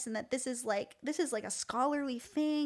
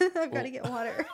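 words through choking on spit, nearly choking, laughing; 4 dB louder than usual. Laughing with another speaker and suddenly choking: choking on own spit. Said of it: "I'm gonna choke".

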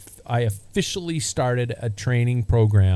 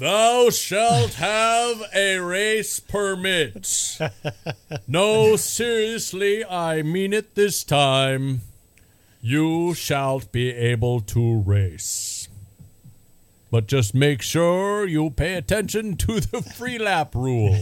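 high, solemn, proclaiming voice, pitched up; 7 semitones higher than usual. Host doing a joke bit for listeners, in a God voice. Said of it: "that was my God voice".

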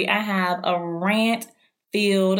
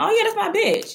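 very high, fond, pleasant, sweet, lighthearted; 13 semitones higher than usual. Demonstrating the tone for calling a friend a name, pleasant and lighthearted. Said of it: "And that sounds pleasant. It sounds lighthearted".

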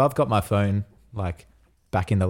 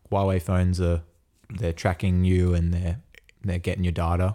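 ordinary talk

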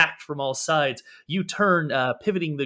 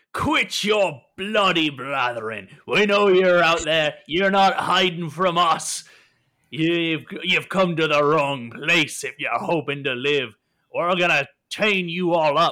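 character voice ringing out as from deep cavern; 2 semitones higher, 4 dB louder than usual. Narrator voices an unseen captor deep within the cavern, voice ringing out from cavern. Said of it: "You hear a voice ring out from deep within the cavern".

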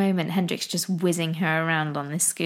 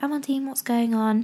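put-on calm, gentle, soft whisper, higher pitch; 5 semitones higher than usual. Retelling how she calms her daughter by her ear: imitating a calm, gentle whisper. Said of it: "I have a little whisper next to her ear".

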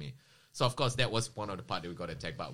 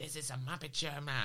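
put-on Australian accent, very high pitch; 9 semitones higher than usual. Retelling what a guy said near the car: imitating an Aussie accent. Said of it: "His Aussie accent was pretty".

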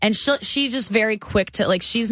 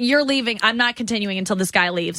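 ordinary delivery

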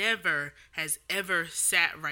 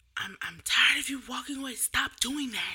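mock yelling, higher; 7 semitones higher than usual. Retelling how a woman scolded a child for walking away; imitating her yelling. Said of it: "She was just going off on him".

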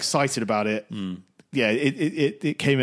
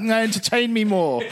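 mock demanding toddler voice, huge and horrible, higher; 9 semitones higher than usual. Describing themselves on the sofa, demanding more: imitating a giant horrible toddler. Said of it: "like some sort of giant, horrible toddler".

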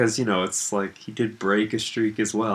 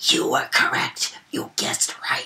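hissing, whispered killer voice; 3 semitones higher than usual. Retelling a scene, voicing the killer's words to the dying man in a hissing killer voice. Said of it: "Hisses like".

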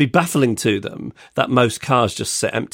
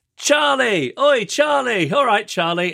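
very high-pitched, put-on, jeering, taunting shouts; 13 semitones higher than usual. Retelling what the group shouted while walking past: imitating people shouting. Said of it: "they all start shouting".

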